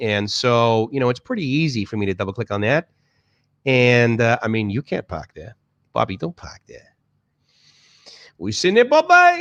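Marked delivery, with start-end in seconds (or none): 4.7-9.4 very high, swooping, put-on Boston accent. Showing the accent of the place grown up in: Boston accent. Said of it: "I can do a Boston accent".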